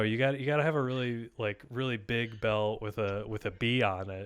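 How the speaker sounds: plain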